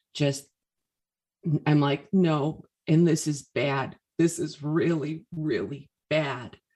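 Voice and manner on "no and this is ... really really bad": put-on tearful speech, forced out through tears. Recalling words said to him through tears, imitating crying. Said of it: "through the tears".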